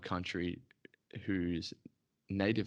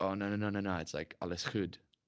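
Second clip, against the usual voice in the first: ordinary delivery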